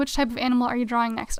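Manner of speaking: normal talking voice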